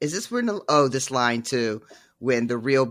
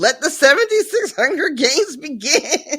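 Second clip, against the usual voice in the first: put-on loud calling voice, much higher pitched; 7 dB louder than usual. Retelling a Hunger Games scene where she opens the games: imitating her real loud announcement. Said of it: "she just goes real loud".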